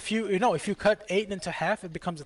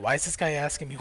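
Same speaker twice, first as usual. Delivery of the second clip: normal talking voice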